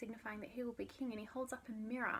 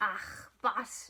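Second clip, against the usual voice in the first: put-on loud, theatrical Scottish accent, warrior-like; 7 dB louder than usual. Retelling Macbeth's final duel, speaker quotes Macduff; Macduff in a Scottish accent. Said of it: "that was my Scottish accent".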